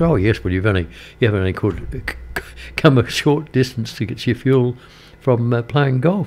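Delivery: ordinary talk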